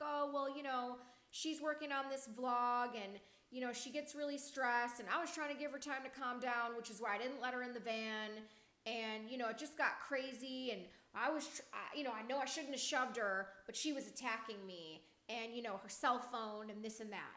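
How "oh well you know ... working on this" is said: plain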